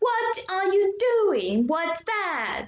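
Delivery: high, put-on Italian accent. Explaining how Italians speak English, demonstrating an Italian accent. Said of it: "I will try to make an Italian accent".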